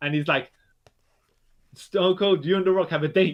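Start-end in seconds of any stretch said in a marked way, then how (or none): 1.7-3.3 dramatic announcer-style promo voice. Retelling a wrestling promo in the voice of The Rock. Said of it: "when The Rock was talking to Stone Cold Steve Austin".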